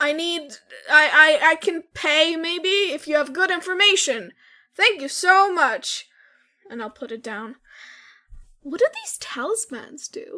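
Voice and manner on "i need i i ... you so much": loud, carrying shout. The speaker calls out a request for help and information, yelling into it. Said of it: "I'm just gonna yell into it like".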